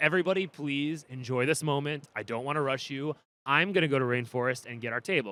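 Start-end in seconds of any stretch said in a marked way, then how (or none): none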